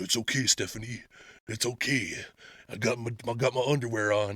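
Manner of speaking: macho wrestler voice, very low, deep, quiet. Speaker acts out a locker-room exchange with Stephanie: Randy Savage impression. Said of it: "you wanted to do your savage impersonation".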